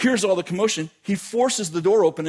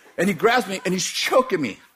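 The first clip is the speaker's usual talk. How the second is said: normal talking voice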